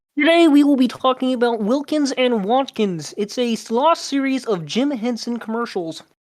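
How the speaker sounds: high, put-on frog puppet voice. Asked by others to do a voice, opening the topic: Kermit the Frog voice. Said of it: "Do Kermit".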